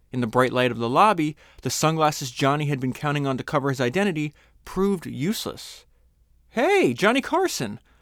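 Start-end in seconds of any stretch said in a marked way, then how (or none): 6.5-7.7 very high, loud, delighted bellow. Reading a doorman recognizing Johnny Carson in his lobby, bellowing. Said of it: "the doorman bellowed".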